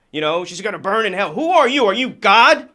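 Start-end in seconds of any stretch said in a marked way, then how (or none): 0.5-1.4 put-on yelling, pitched higher. Retelling what Roger Stone said after a death: imitating Roger Stone yelling. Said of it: "coming out yelling".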